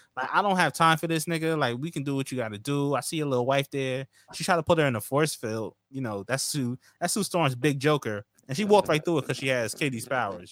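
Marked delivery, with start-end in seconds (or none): none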